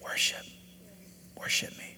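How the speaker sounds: hushed, very soft, barely-there whisper. Retelling the reply to their not wanting to worship, spoken quietly. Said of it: "the Holy Spirit so quietly say".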